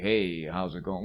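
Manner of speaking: deep, slow, mellow, smooth flirty drawl. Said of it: "he gets a real deep".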